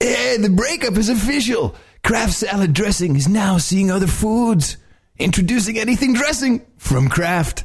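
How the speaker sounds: over-the-top surfer dude voice, very high pitch. Reading a salad dressing ad script on request, extreme surfer dude voice. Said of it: "Do the extreme surfer dude".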